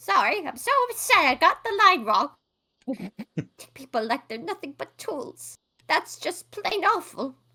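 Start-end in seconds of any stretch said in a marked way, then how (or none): 3.4-7.3 put-on elderly woman voice. A player redoes a line she got wrong, in character: old lady voice. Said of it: "This is old lady me".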